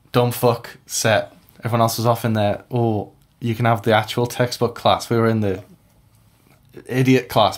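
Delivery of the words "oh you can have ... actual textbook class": plain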